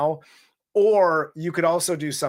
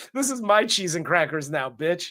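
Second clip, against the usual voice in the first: usual speaking voice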